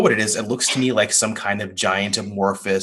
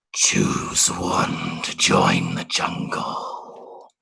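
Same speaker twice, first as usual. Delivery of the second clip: very slow, rough, creaky giant-creature voice; 3 dB quieter than usual. Voicing a giant creature that speaks to the group: booming creature voice. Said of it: "this voice kinda start to boom out from it".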